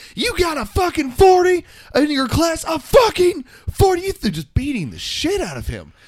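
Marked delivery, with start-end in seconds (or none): 0.2-4.2 piercing, shrill, very high, furious screaming. Recounting a mom overheard on Xbox Live yelling at her kid, imitating a mother screaming. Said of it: "his mom was screaming".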